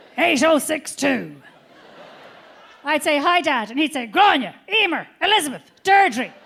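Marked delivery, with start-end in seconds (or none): 0.2-1.4 phone voice, clearing throat with a cough, slower. Show your listener how Dad would answer the phone, imitating Dad's throat-clearing phone answer. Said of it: "answer the phone by clearing his throat with a cough".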